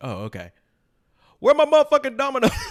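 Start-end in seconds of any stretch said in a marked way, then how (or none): 1.4-2.5 very high, climbing, acted angry complaining voice. Retelling a skit's funny moment, imitating the dad's angry complaint. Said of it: "And he's like".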